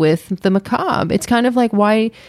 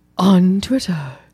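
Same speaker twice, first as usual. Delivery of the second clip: mock dramatic delivery with dramatic pause. Mocking a co-host's sign-off: imitating a dramatic pause. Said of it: "did this dramatic pause of".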